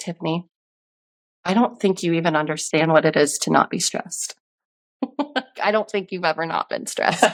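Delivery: put-on very serious voice. Retelling what their therapist told them, imitating a very serious voice. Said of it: "In her most serious voice".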